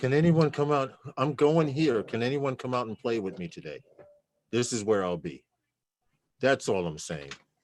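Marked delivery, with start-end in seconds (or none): 0.0-5.4 needy, desperate, pleading voice. Acting out how someone asks others to come out and play: imitating a desperate plea. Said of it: "it sounds really, really desperate when you say".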